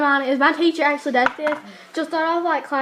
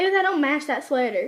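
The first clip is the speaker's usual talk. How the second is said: plain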